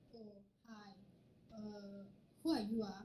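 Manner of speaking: very monotonous, flat, slow, toneless delivery. Acting out someone answering an employer's phone call, very monotonous tone. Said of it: "answering you in a very monotonous tone".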